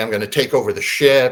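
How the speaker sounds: normal talking voice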